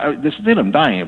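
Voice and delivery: ordinary talk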